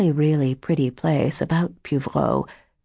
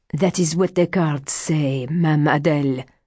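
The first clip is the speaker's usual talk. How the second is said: usual speaking voice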